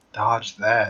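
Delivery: whispered in a character voice. Voicing Valen kneeling down over a fallen foe: whispering in character. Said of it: "kneels down and whispers".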